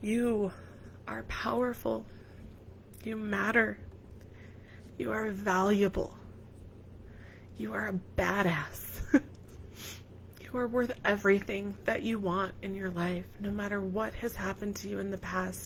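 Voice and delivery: soft, tearful voice breaking through tears. Giving listeners a final affirmation after pausing to stop crying, crying while speaking. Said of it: "I really want to stop crying before I say this last word".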